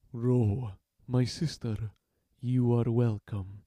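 low, slow, gentle voice. Narrating a door guard greeting an arriving woman, in a low, soft voice. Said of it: "We reach the door, barred by a pair of brutes. They are armed, one augmented with a claw of burnished iron, ... his voice low and soft despite his aggressive bulk".

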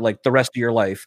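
ordinary talk, nothing marked

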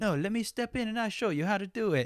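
very high, sort-of put-on Italian accent. Describing a film character stepping in to show the husbands, imitating an italian accent. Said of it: "I made him like kind of Italian".

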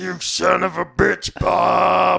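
very slow, rough, creaky drawl, one word stretched. Acting out a scene, voicing the good friend Gary: imitating Gary. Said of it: "I can't do a good Gary impression".

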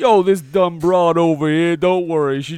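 put-on New Jersey accent. Speaker acting out what he basically says, in a put-on New Jersey accent. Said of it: "he has a Jersey accent".

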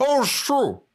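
put-on very high voice, talking with mouth stuffed. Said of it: "Coco with a full mouth goes".

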